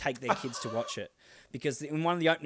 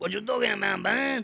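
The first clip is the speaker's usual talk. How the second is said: loud, aggressive, fake Mexican accent; 9 semitones higher, 5 dB louder than usual. Showing one of two mexican voices he does, aggressive put-on mexican accent. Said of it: "I do 2 Mexican voices and it's really aggressive".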